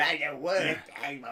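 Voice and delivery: mock, high, slow, complaining whine.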